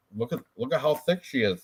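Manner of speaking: plain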